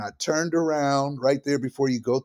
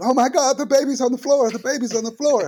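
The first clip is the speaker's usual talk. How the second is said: mock hysterical panic, very high, loud, frantic; 12 semitones higher, 6 dB louder than usual. Retelling the mom seeing the baby on the car floor: imitating her losing it. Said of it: "her mom just lost it".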